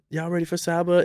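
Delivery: mock shy voice. Recalling how he used to introduce Saba, speaker uses a mock-shy voice. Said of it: "and like a real shy voice".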